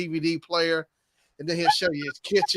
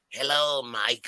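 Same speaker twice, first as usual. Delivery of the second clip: put-on voice of an older woman; 5 semitones lower than usual. Retelling a comedian's bit about older ladies at the bar: imitating an older lady. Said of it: "the older lady talk to him like".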